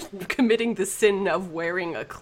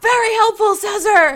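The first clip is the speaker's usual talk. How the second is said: full-throated, very high, very loud, shrill in-character yell; 12 dB louder than usual. A player voices her character calling out to a companion mid-fight, yelling. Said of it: "she'll yell".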